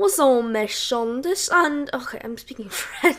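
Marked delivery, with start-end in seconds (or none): 0.0-1.5 put-on British accent, a first attempt. Trying out different accents on a podcast: british accent. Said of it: "let's try British".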